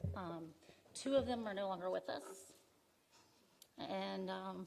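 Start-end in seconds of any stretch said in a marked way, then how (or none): 0.9-2.4 choked-up voice, shaky and wobbling with emotion. Telling the audience two family members are no longer living: emotional, voice a little shaky. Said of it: "I didn't expect to get emotional here".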